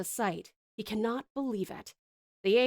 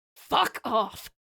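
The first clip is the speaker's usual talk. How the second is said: snarled, enraged growl; 4 dB louder than usual. Narrating a grieving man snapping at a little girl who asked if he's okay, angry growl. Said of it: "he growls".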